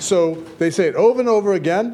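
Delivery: normal talking voice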